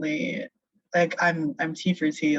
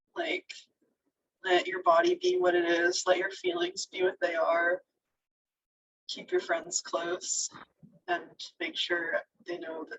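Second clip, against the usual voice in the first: crying a little, very high and soft; 11 semitones higher, 5 dB quieter than usual. Addressing the listener directly, crying a little while talking. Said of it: "I'm crying a little bit".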